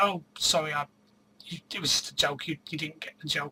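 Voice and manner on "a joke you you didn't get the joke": normal talking voice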